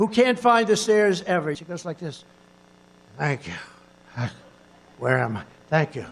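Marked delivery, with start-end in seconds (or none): 3.2-6.1 very low, dropped-down voice. Imitating Biden during a speech: Biden impression. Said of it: "When I imitate Biden".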